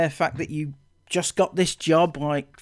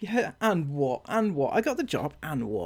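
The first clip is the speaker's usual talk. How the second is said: smug, self-satisfied, dismissive so-what tone; 5 dB quieter than usual. Retelling what the other speaker said about getting the job: imitating a smug reply. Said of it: "you said it very smugly".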